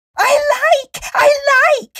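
shrill, loud squeal, pitched way up. A narrator reads a character jumping about the narrator's legs, squealing. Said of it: "squealed Zanzibar".

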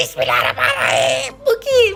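terrified shouting cry.

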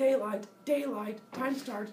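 voice like an alarm. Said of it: "that's what his alarm says".

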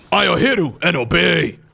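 very slow, rough, creaky game-unit voice. Casting a match, trying a Warcraft unit impression. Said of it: "My Warcraft unit impressions aren't that good".

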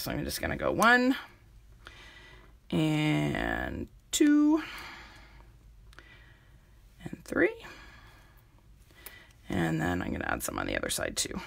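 croaky voice. Adding rhinestones to a craft while talking through it: croaky voice. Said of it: "my voice is going quite croaky".

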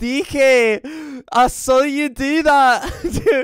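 very loud, high, put-on Scottish accent. Joking about how often he says this, imitate Scott with a Scottish accent. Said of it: "do you do the Scottish accent when I'm not here?".

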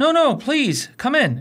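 very high, cheery, cheerful tone. Narrator voicing Holmes inviting his visitor in, cheerful. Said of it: "said Holmes cheerfully".

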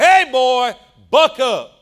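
very loud, very slow, booming, drawn-out bellow. Retelling how an aunt called out over the congregation, imitating Aunt Jan's booming voice. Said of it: "with a booming voice over the whole congregation".

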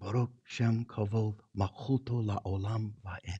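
very quiet, slow, half-whispered speech in Hebrew. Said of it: "but it's in a whisper".

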